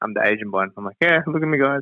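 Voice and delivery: ordinary talk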